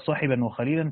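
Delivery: normal talking voice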